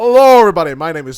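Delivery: very loud, booming, online video host voice. Someone's failed impression sounds like another person, so demonstrate who in a Markiplier voice. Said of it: "You do sound like Markiplier".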